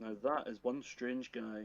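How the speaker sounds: soft mutter under the breath. Narrating Giles walking down the stairs, muttering to himself. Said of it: "he mutters to himself".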